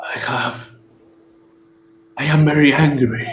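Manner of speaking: alien voice from another dimension. A voice from another dimensional plane answers your call, in an alien voice. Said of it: "an alien voice ... says the voice".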